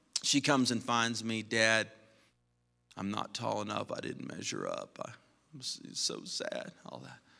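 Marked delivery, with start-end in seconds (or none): 1.4-6.7 put-on soft, tearful, upset little kid voice. A father retells his daughter coming to him too short, imitating a crying child. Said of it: "She's crying".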